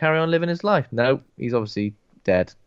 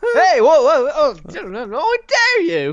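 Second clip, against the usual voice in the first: mock high, swooping, drawn-out squeal of startled outrage; 12 semitones higher, 5 dB louder than usual. Acting out a sudden startled reaction after a teasing joke: mock startled outrage. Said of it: "It sounded like someone surprisingly put a thumb up your bum".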